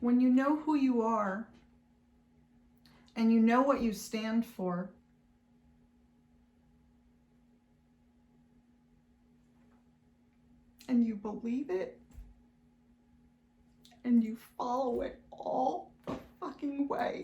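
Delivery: voice holding back crying, pressing on. Speaker tells listeners a life lesson, holding back tears. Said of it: "I'm gonna try to say it without crying".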